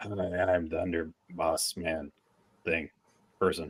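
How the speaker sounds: deep, low, growly voice broken into halting pieces. Guessing how someone's voice sounds, deep growly impression voice. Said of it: "like deep growly impression".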